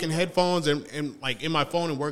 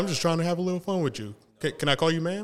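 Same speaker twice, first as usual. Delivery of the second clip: ordinary talk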